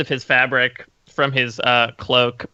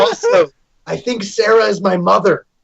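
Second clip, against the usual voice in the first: put-on voice whispered, slightly higher pitch; 6 semitones higher, 4 dB louder than usual. Whispering into Poe's ear in character: whispering in character. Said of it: "I'm gonna go to whisper into Poe's ear".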